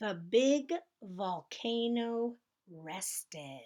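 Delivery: slow whispered speech, spaced out word by word.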